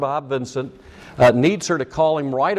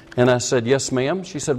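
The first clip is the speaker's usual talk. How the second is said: normal talking voice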